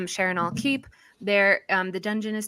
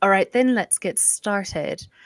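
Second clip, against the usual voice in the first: put-on Irish brogue. Game master voicing a character who clears his throat to begin: Irish accent. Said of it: "why did I do Irish?".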